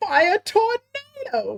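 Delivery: very high, odd dubbed-sounding delivery. Mocking how a dubbed character calls his special move: imitating Axel's dub delivery. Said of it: "Why you gotta f-, say it like that?".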